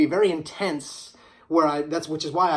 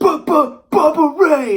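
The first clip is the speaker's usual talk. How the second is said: very loud, high, booming stuttering shout; 11 semitones higher, 9 dB louder than usual. Apologizing for stuttering, the speaker compares himself to a wrestler: stuttering Bubba Ray Dudley impression. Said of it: "I sound like uh, Bubba Ray Dudley back when he first came and he was like".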